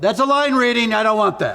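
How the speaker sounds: put-on very high, loud, ringing yell. Retelling what a co-star would yell about line readings: imitating JoBeth Williams yelling. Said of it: "And she'd yell".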